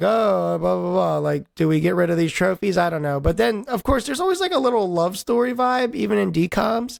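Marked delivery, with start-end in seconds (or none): none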